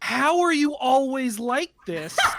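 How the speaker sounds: high disbelieving tone. Retelling a friend's reaction to a dad joke: imitating someone in disbelief. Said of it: "just the most disbelief in your voice".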